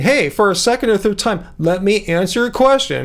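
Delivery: ordinary delivery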